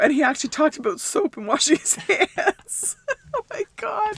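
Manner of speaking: talking through laughter. Recalling a video about washing hands, laughing while talking. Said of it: "I'm sorry for the laughing".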